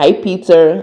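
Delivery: ordinary talk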